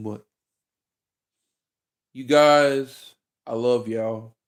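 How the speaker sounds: on the verge of tears. A video creator thanks viewers for nine years of support, almost crying. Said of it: "Almost cried".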